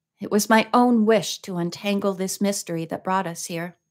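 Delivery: ordinary delivery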